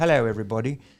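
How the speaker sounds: loud, posh, sophisticated British accent. Showing different kinds of British accent, sophisticated British accent. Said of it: "There's maybe a little bit sophisticated".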